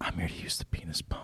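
close-mic, hushed, breathy ASMR whisper. Suggesting an off-camera bit, the speaker demonstrates how the other person would sound: whispering. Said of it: "It's you whispering".

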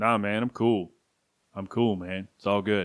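low, laid-back, chill cool-guy voice. Retelling Rodman elbowing Pippen, then doing Pippen's reply: Scottie Pippen impression. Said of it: "let me see if I can do Scottie Pippen".

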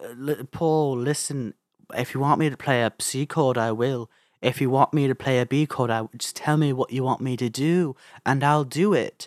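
put-on Liverpool accent. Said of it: "my [name] impression".

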